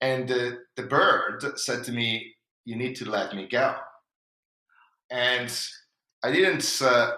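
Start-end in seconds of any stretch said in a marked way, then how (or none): none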